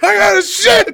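very high, very loud plain yell. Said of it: "He was just yelling".

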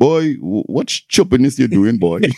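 put-on deep voice, Trinidadian accent. Quoting what his dad said to him, in a deep Trinidadian accent. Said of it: "with his Trini voice, deep Trini voice".

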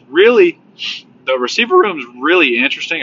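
voice cracks mid-sentence, jumping up in pitch. Speaker discussing the team's receiver room, with a voice crack. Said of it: "big old voice crack right there".

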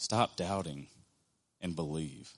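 calm, soft, unexclaimed, even delivery.

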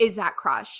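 imitated very sassy tone. Retelling what a late adopter asked about the dog: imitating a very sassy tone. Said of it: "very, very sassy".

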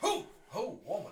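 mock shrill, very high, loud, frightened startled cry. Retelling how the father-in-law reacted on seeing Anita: imitating a startled scared voice. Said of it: "It's like he was scared".

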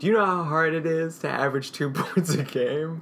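high, sarcastic, mock-sympathetic tone. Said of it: "Clearly he's being sarcastic".

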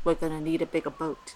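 very quiet, low, hushed delivery. Asked for a horror movie impression, doing a Jaws movie impression. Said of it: "I'll do an impression of it".

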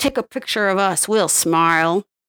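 put-on sneering, mocking voice with bared teeth. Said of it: "bares his teeth at him".

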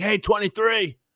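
put-on very drunk yell. Retelling a man in a video yelling at ballplayers; imitating a very drunk yell. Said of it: "he just sounds like he's just annihilated".

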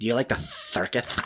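put-on lisp. Repeating the movie line that makes them laugh: Kilmer lisp impression. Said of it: "I laugh every time".

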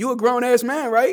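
put-on sarcastic voice. Repeating another speaker's words back to show how they sounded: imitating a sarcastic tone. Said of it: "That's sarcasm".

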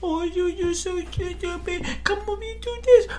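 put-on very high baby-talk voice. Complaining about how adults talk down to kids, mocking baby talk to kids. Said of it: "baby talking to them".

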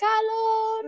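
soft put-on voice. Describing how the movie soundtrack version starts, imitating a soft call. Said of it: "she starts off really soft".

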